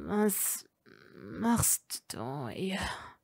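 very slow, soft, cracking, broken, barely intelligible. Narrator reads him asking her while she holds him down, broken and barely intelligible. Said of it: "fragte er brüchig und kaum verständlich".

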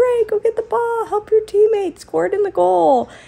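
put-on, very high, shrill yell. Recalling yelling at Gray, who hangs back during the game: retelling a yell. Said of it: "I'm yelling at him like".

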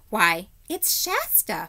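with a gasp. Erebus looks twice at his face and recognizes him, gasping. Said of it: "she gasped and said".

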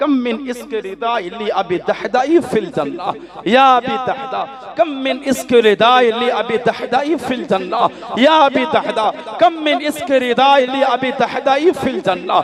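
high, slow weeping lament.

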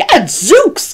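very high, startled, gasped exclamation. Reading the bear's line on seeing Tacky, gasping. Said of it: "gasped the bear".

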